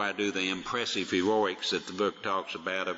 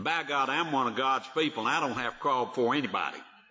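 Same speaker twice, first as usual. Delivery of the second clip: high, mock proud, defiant boastful tone; 5 semitones higher than usual. Imitating how people misquote a line about not crawling: defiant tone. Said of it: "it's usually said about in this tone of voice".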